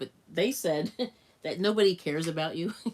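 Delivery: words broken up by laughing. Recounting what a YouTuber said, laughing while talking. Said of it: "I'm laughing because it's so it's so extreme".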